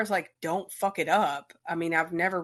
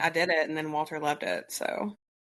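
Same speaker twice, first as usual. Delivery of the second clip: ordinary talk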